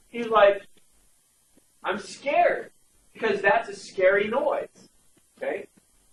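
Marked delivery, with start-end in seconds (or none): 1.8-2.7 mock frightened, high, scared five-year-old's voice. Retelling a child's fear of a scary road noise: imitating scared Cooper. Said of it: "my five-year-old Cooper was freaking out".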